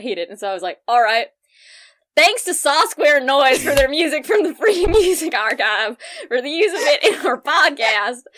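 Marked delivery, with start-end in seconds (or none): 2.2-8.2 put-on disgustingly poor, over-the-top Southern accent, pitched up. Recalling doing the accent your dad hated, in a bad exaggerated southern accent. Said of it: "hard and... bad and just disgustingly poorly Southern".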